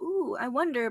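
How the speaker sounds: plain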